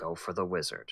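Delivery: hushed, quiet half-whisper. Half-whispering to a fellow player before they sneak in: half-whispering quietly. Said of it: "I whisper to you quietly".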